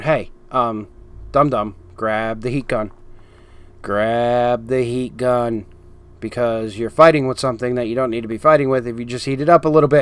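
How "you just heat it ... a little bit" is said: ordinary talk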